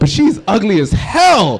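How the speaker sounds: blunt, swooping, animated, acted-out tacked-on blurt. Imitating someone who says the messed up part loud: said loudly. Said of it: "say loud the messed up part".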